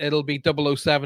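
usual speaking voice

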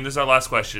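ordinary delivery

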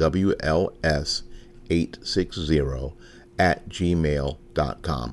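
slowed down, careful. Podcast host giving listeners an email address, slow and deliberate. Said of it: "I slowed down because I got some feedback that I say that so fast".

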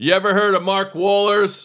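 shrill, pitched-way-up, very high, loud scream. Retelling how a player walks past security: imitating Jim Leyritz screaming. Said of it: "he screams to the security guard".

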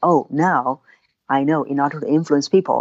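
usual speaking voice

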